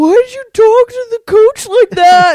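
embarrassed scolding. Retelling how Casey reacted after the speaker talked to the coach, imitating embarrassed Casey. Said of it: "Casey was so embarrassed".

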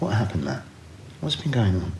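soft, put-on therapy-session voice. Retelling how a man asked him what happened, in his therapy voice. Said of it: "he put on his therapy voice".

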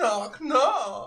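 shrill, very high, loud, booming disembodied voice. Narrating a scene to the players, a voice from all directions. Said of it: "you hear a voice coming from all directions at once".

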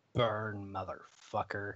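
close, hushed stage half-whisper. Voicing a character who half-whispers in the burning enemy's ear: half-whispering in his ear. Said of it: "And she whispers in his ear".

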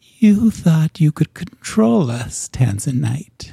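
hissing, distorted spider voice. Your family appear as spiders speaking to you, twisted voice. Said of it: "their voices are twisted".

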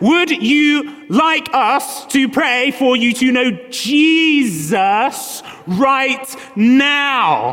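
mock insistent, overstated, emphatic near-shout. Retelling the sister's question to grandma in the cafe, acting out practically shouting. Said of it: "now practically shouting".

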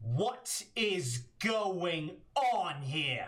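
big booming, resounding voice. A narrator voices an unseen figure calling out from behind the players, booming voice. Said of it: "you hear a booming voice from behind you".

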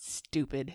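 mock sulky, upset, grumpy, one word. Retelling a friend's reply while out looking at lights: imitating an upset friend. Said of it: "he was upset about something that night".

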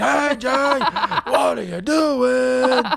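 very high, very slow, drawn-out screamed holler. Describing someone who mainly communicates through screaming: imitating someone screaming out. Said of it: "he mainly screams out things".

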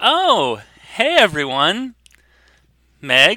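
very slow, high, sing-song put-on charming friendliness. Voicing a girl who spots a crowd in her dad's store: turning on the charm. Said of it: "she turns on sort of her, like, the charm".

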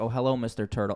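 put-on polite little kid voice. Retelling a scene, imitating Gohan, polite. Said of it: "he's just a very polite kid".

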